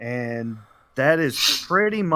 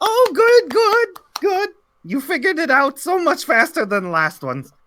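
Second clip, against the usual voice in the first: very high, loud, swooping sing-song wizard voice; 6 dB louder than usual. Voicing a wizard who demands a gift from the visitors: voicing the wizard Lisban. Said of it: "I am Lisban".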